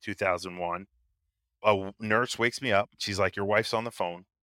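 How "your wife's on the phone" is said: ordinary talk, nothing marked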